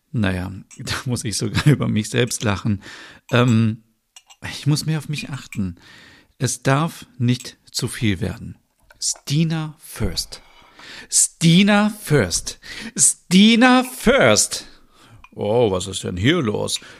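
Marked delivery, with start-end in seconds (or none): 11.1-14.6 very slow, high, drawn-out shout, rising and building. A woman named Stina pepping herself up in the morning, shouting. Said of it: "warum du hier rumschreist".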